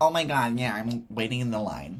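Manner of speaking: terrible put-on American accent, drawn out. Retelling how american guests answered a question about queues: terrible american accent impression. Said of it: "this is a terrible American impression".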